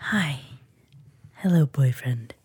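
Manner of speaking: put-on soothing radio voice. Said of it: "it's that soothing, husky voice".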